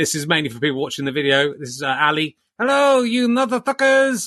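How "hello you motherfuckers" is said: very high, pitched-up puppet-like dummy voice. Introducing new co-host Ali to video viewers, in Ali's ventriloquist dummy voice. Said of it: "I'm getting pretty good at ventriloquism".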